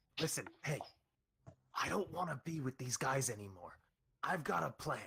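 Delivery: hushed whisper. Voicing a character who leans in to a player: whispering. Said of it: "And she whispers".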